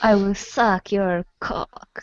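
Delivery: very heavy, slow Russian accent.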